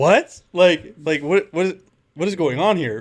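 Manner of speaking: shocked, incredulous outburst.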